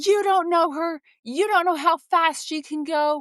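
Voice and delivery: mock, heated, high-pitched, fired-up angry outburst. Retelling how a dad with a jogging stroller fired up at another guy: retelling an angry outburst. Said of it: "he fires up and he's like".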